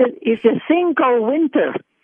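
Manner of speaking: put-on Puerto Rican accented speech. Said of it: "you can still do your mom's accent".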